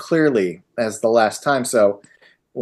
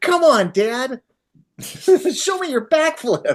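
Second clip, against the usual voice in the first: put-on excited, eager little-kid voice, very high, very slow; 11 semitones higher than usual. Imitating the grown son calling his dad onto the trampoline: imitating eager childlike energy. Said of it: "one of his most himbo moments".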